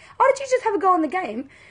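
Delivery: put-on bright, light tone. Retelling asking her if she had a go in the game: put-on happy voice. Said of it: "I said it in a happy voice".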